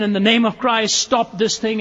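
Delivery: acted shouting out. Retelling a story, voicing a man who shouts to the crowd and royalty, retelling a shout. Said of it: "he shouts out once again".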